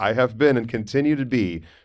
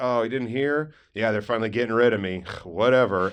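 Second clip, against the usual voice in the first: mock sarcastic delivery. Retelling a joke told to students: imitating own sarcastic remark. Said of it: "a lot of high schoolers can't quite read sarcasm".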